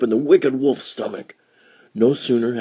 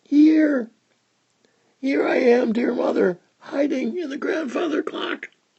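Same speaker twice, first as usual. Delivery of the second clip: very high, small, tiny little voice; 14 semitones higher than usual. Reading a fairy tale, the youngest answers his mother, in a tiny voice. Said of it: "a tiny voice replied".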